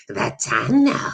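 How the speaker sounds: put-on creature voice. Showing how saying the word out loud always comes out: Gollum impersonation. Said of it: "like that".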